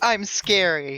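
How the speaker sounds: small half-hearted scream, mild yell. Voicing a character who screams to frighten enemies: screaming in character. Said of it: "He screams".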